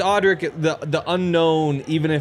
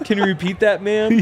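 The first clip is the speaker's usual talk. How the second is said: dopey, pitched-up bro voice; 5 semitones higher, 3 dB louder than usual. Joking with friends about Siri set to a bro voice: Siri bro voice impression. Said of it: "You have Siri on a bro voice?".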